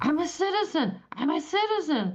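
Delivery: mock shrill, piercing, high-pitched scream. Describing people in scrubs dragged from their cars, imitating someone screaming. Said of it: "that are screaming".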